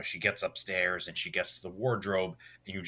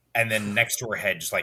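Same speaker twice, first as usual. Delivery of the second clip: plain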